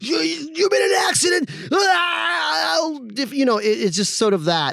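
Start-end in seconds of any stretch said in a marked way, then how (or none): 0.0-3.0 put-on very high scream, drawn-out "ah", ad voice. Imitating a lawyer's radio ad, imitating Jim Adler screaming. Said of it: "him screaming, like".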